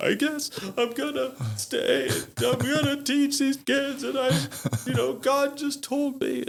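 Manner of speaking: very high, bawling, tearful ugly crying. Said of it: "I was bawling and crying".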